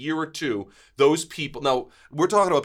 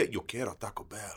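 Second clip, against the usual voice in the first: put-on breathy, whispered voice in a Mexican accent; 6 semitones lower, 12 dB quieter than usual. Friends discussing a dog mascot; one does a Taco Bell chihuahua impression. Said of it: "That was a much better impression than I did".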